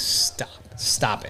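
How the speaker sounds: hushed, unvoiced, soft whisper.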